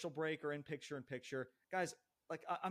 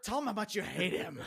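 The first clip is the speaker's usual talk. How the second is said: put-on deep screaming voice, louder; 4 semitones higher, 7 dB louder than usual. Imitating a boss screaming into a commentator's ear: imitating Vince McMahon's deep voice. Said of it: "in that deep fucking voice or whatever".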